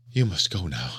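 breathless, out of breath. A woman urges the narrator to leave the studio, breathless. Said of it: "she said breathlessly".

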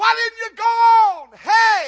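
piercing, very high, very loud shouting holler. Retelling how a woman stuck her head out the car window, retelling a holler. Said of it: "sticks her head out the window and hollers".

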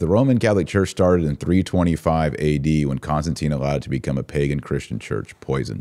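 ordinary talk, nothing marked

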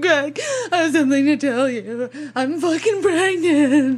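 crying, freaked-out, high and tearful panic. Retelling telling a partner about a pregnancy: imitating someone crying and panicking. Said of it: "crying and freaking out".

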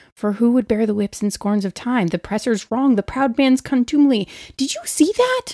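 whispered, quiet aside. Player's character elbows another character and leans to her ear, whispering. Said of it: "I lean over and I whisper in her ear".

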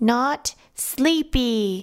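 high-pitched, through clenched, gritted teeth. Told to go lie down in bed, she answers him; through gritted teeth. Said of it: "she said through gritted teeth".

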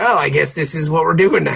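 normal talking voice

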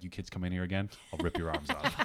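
calm, offhand, matter-of-fact menace under the breath. Imagining a referee threatening kids after leaving the room: imitating a quiet matter-of-fact threat. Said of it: "so matter-of-factly and just very quietly".

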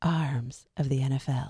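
very low, hushed, soft late-night radio voice. Saying a phrase again for the others to vote on, in a late-night Delilah voice. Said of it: "That's my best, like, late night Delilah".

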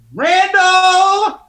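shrill, very loud yelling. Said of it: "Was that you yelling at yourself?".

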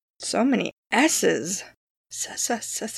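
whispered, drawn-out, snake-like hiss on s. Speaker explaining the six sides of honeycomb cells, hissing like a little snake. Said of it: "I sound like a little snake".

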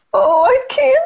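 put-on very high, small, helpless child voice. Describing aggressive children who feign helplessness, imitating their little high voice. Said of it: "I get the little high voice".

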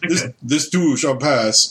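put-on Eastern European accent. Imitating a World of Warcraft character's catchphrase: Draenei Eastern European accent. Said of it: "it does sound Eastern European".

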